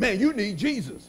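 facetious joking tone. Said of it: "they say it like a joke".

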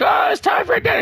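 put-on very high, far-carrying calling yell. Speaker retells their mom calling from across the road, imitating mom yelling. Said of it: "And my mom yells".

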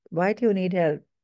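ordinary delivery

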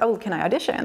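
normal talking voice

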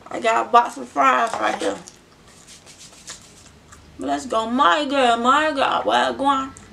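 talking while chewing, with smacking. Greeting viewers while eating a box of fries, chewing while talking. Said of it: "I'm eating some fries, so if I'm chewing, smacking".

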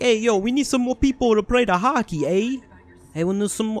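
put-on Canadian accent. Joking about robots, speaker voices Canada in a put-on Canadian accent. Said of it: "I can't do the Canadian accent right now".

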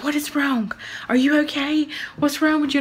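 hushed half-whisper. Retelling a phone call where he answered from a tree: imitating someone half-whispering. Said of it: "he's literally sitting in a tree whispering".

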